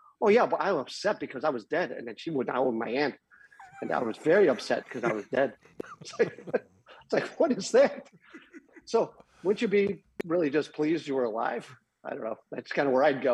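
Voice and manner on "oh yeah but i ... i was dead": ordinary talk, nothing marked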